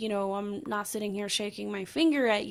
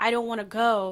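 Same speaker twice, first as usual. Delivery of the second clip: words sobbed out through tearful bawling; 4 dB louder than usual. Retelling crying weeks after an episode: imitating own past crying. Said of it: "bawling my eyes out to you".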